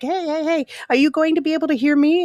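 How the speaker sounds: put-on very high, pestering, nagging kid voice. Retelling a TV exchange with Patrick on the radio: Patrick as an annoying kid. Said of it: "Patrick's, like, an annoying kid".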